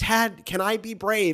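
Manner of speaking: slow, high-pitched, earnest pleading tone. Retelling a film scene of a son asking his dad: mocking Dietrich Bonhoeffer. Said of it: "I'm mocking it".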